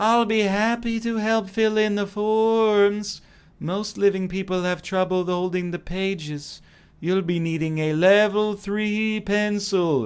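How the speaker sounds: high, eerie, ghostly voice from nowhere. A narrator voices a ghost answering a knock at the town hall, ghostly voice. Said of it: "a ghostly voice comes out of nowhere".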